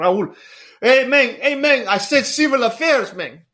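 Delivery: very high-pitched, badly done, botched put-on voice. Retelling a friend urging him toward civil affairs, imitating a friend. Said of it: "butchering your, the imitation".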